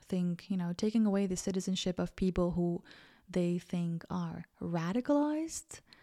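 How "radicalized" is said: skeptical scare-quotes tone, pitched up, on radicalized. Describing a citizenship policy: scare-quote tone on "radicalized". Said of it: "in quotation marks. I hope you heard that in my voice".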